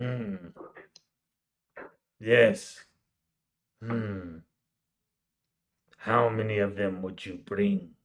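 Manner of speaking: weird, low cyclops monster creature voice. A cyclops-like creature answers a question telepathically, telepathic cyclops creature voice. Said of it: "that weird Cyclops thing over there, / And once again in your head".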